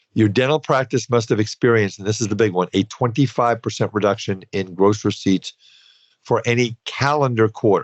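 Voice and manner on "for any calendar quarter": heavy emphasis on the word calendar. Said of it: "Emphasis on calendar".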